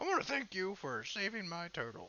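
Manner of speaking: put-on high, sing-song old game-character grandpa voice. Imitating a character who thanks someone for saving his turtle: old man from Pokemon voice. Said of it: "I sound like that old man from Pokemon".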